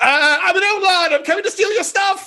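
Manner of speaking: high-pitched, loud outlaw holler. Voicing a character dive-bombing a train with riders: character yelling. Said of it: "he yells".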